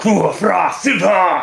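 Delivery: draconic, dragon-like call. Narrating to the players as a character calls out: shouting in Draconic. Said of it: "as he goes".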